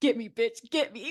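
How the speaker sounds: goading, provoking, taunting tone. Retelling how Danielle waited for Jen to push her: imitating Danielle. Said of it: "She was like".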